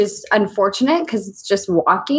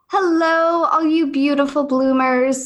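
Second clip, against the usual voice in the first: smooth, polished put-on radio announcer voice; 6 semitones higher than usual. Greeting an audience in a put-on radio voice, smooth like a host, as a joke. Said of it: "That was my radio voice".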